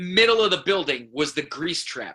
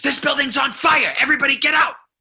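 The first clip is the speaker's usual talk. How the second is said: put-on very high, loud, urgent scream; 10 semitones higher, 5 dB louder than usual. Retelling a man bursting into a restaurant; imitating a man screaming. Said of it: "this guy screams".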